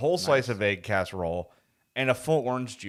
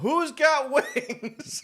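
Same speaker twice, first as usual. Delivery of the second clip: mock, very high-pitched shouted call. Retelling driving home and shouting out the window: imitating a shout. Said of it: "I'm shouting out the window".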